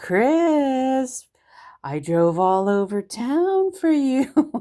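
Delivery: very slow, jokingly exasperated, drawn-out mock annoyance. Retelling what the speaker told chris after driving all over town, retelling joking annoyance. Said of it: "just like annoyed, but I said it in a funny way".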